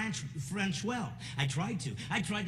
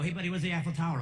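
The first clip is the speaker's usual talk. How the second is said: ordinary delivery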